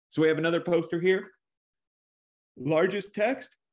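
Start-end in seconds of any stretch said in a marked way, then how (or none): 2.5-3.5 spoken mid-yawn, much higher pitch. Pointing out text on a poster during a lesson, yawning while speaking. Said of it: "Sorry, I'm yawning".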